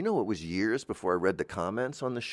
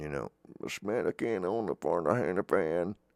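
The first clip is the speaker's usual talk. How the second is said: put-on very deep, low-pitched old man voice; 3 semitones lower than usual. The speaker voices their own inner wisdom: very low old man voice. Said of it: "it has a very low old man voice".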